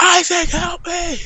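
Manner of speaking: mock screaming, very high pitched. Acting out a made-up story, being attacked: screaming for help. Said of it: "I continue to scream".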